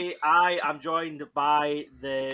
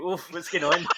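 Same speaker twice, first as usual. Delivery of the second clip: normal talking voice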